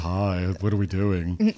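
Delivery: low, slow, creepy lurking voice. Showing how an imagined pervert sounds: creepy pervert voice. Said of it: "He sounds like this".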